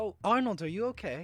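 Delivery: high angelic voice. Voicing Grace calling to Arnold from behind him: angelic voice. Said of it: "an angelic voice from behind you".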